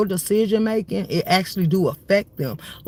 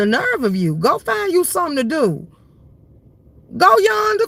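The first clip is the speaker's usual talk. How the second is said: put-on very high, swooping old great-grandma voice; 9 semitones higher, 3 dB louder than usual. The speaker tells off someone who plays with them, in their great grandma voice. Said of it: "in my great grandma voice".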